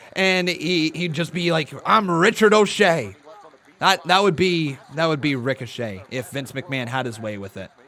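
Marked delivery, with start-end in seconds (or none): 1.9-3.2 loud, put-on, laid-on stage-Irish accent. Imagining a wrestler given an Irish gimmick, put-on Irish accent. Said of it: "They'd give him an Irish accent".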